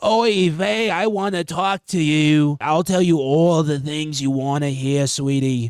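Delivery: raspy, synthetic, sweet-sounding chatbot voice. Imitating how the language model talks to its user, raspy AI voice. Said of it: "a little bit more uh, raspiness in its voice".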